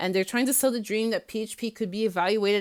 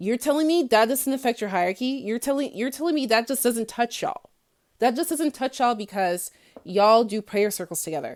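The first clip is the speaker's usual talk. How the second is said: fast, heated, worked-up, fired-up rant; 3 semitones higher, 3 dB louder than usual. Ranting to viewers about uplines and hierarchy, worked up. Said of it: "Let me calm down because I'm going to lose my voice".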